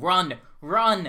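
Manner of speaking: very loud, panicky, urgent voice. Game master voicing the voice inside Cyrus and Dawn's heads as the beast wells up, panicked. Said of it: "this panicked voice inside your head just tells you".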